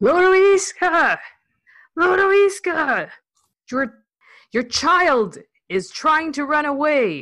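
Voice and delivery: very high yelling, calls stretched long. In character, carrying a struggling child down the street: yelling for someone. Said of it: "I am yelling for Lodoiska".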